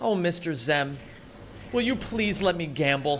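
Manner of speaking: put-on, fake begging tone. Showing others how to beg to be allowed to gamble: mock begging. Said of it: "put on your puppy doll eyes and say".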